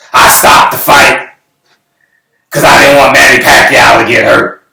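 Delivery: put-on raspy elderly voice. Retelling what the promoter said: imitating raspy old voice. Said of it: "in his eighty-seven-year-old raspy voice".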